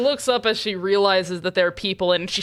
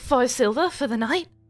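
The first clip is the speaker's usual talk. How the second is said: high-pitched, embarrassed, switched character voice; 5 semitones higher than usual. Voicing a tiefling naming the room price: switched tiefling voice. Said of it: "I just switched her voice".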